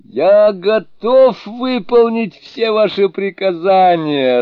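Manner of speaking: very high, loud, gleeful joyful exclamation. Reading a story aloud, giving the Fool's reply: joyful exclamation. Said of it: "радостно воскликнул Дурень".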